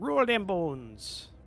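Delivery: put-on Cajun accent. Telling players to roll their dice: put-on cajun accent. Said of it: "I don't know why I use that accent".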